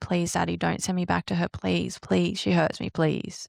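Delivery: tearful, crying, pleading delivery. Retelling begging daddy in the car as a child: retelling a tearful plea. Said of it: "I would cry in the car to you and I would say".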